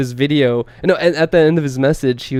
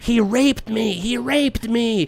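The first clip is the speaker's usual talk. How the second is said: mock woman's scream, much higher; 9 semitones higher, 3 dB quieter than usual. Recounting a confrontation on the street, imitating a woman screaming. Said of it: "she starts screaming".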